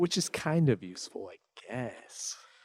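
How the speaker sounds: sarcastic, fading soft. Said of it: "That was sarcasm".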